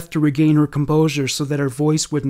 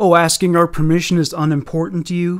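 usual speaking voice

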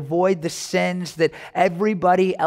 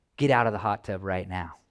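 put-on play-acted, strict, no-nonsense, stern grandmotherly voice; 10 semitones lower, 5 dB quieter than usual. Retelling grandma's order to leave the hot tub: imitating stern grandma. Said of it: "my grandma's never very stern with me, but she's like".

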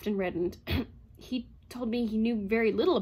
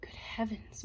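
muttered, mumbled under breath, much quieter; 9 dB quieter than usual. A man reacts to the psychologist's questions, muttered. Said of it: "muttered Bogart".

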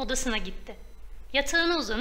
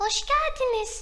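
bashful, shy, very high little voice; 12 semitones higher than usual. Hiding behind the mother, Deniz welcomes the old woman in a shy tone. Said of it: "utangaç bir ses tonu ile".

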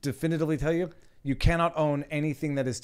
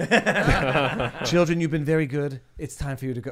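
put-on creepy way of talking; 5 dB louder than usual. Imitating someone talking to your kids: imitating a creepy way of talking. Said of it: "the creepiest thing is when he starts talking to your kids".

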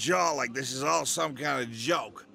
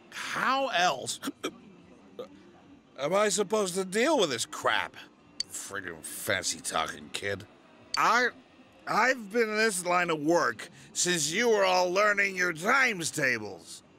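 put-on tipsy, slurred, sloppy drunk speech; 4 semitones higher than usual. Complaining about a fancy-talking kid after too much drink: drunk speech. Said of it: "he had a little too much to drink".

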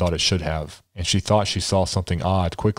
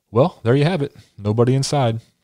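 feigned, friendly, pleasant voice, pitched up; 6 semitones higher, 3 dB louder than usual. He puts on a smile and answers another man: put-on pleasant voice. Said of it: "slipped on his pleasant voice".

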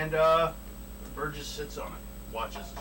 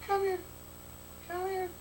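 faint, faraway, faded call, very high-pitched; 3 dB quieter than usual. The game master voices a voice from the kennel calling the dogs: quiet faded voice of Anna. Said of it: "Quietly. Faded".

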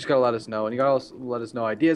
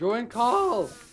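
voice breaks into a very high cracking squeak; 10 semitones higher than usual. Urging someone to join the call, voice cracking. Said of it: "Oh, voice crack".

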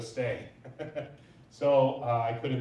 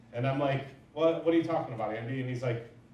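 ordinary delivery

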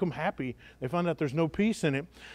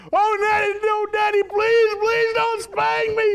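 mock little girl yell, higher, louder, slower; 6 dB louder than usual. A father retells his daughter yelling as he walks her down the church aisle: imitating a child yelling. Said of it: "She's yelling it all the way down".

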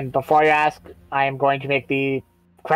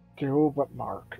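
soft, hushed half-whisper; 9 dB quieter than usual. Voicing a character half-whispering into his earring: half-whispering in character. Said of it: "he's whispering the "do but mark" bit".

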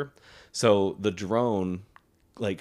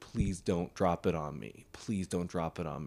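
mock pleading, much quieter; 2 semitones lower, 8 dB quieter than usual. Retelling a soldier begging a grenade drone, imitating his pleading. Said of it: "this guy is pleading".

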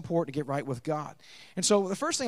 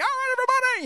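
put-on very high shriek, workout instructor voice; 5 dB louder than usual. Imitating a ponytailed workout video guy: imitating someone screaming. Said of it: "you should be screaming".

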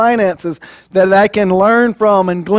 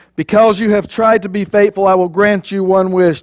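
plain

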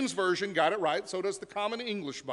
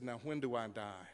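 mock quivering voice, lower and quieter; 10 semitones lower, 13 dB quieter than usual. Retelling what a boy said to the doctor, in a put-on quivering voice. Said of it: "in a very quivering voice".

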